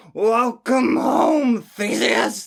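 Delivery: very high, badly pitched. Quoting a famous line from a streamer: terrible Technoblade impression. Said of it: "That was a terrible Techno impression".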